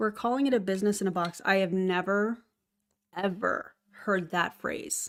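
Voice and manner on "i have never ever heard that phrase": slow, sarcastic, feigned astonishment. Reacting to a pitch phrase heard in a video: sarcastic. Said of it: "That's sarcasm, by the way".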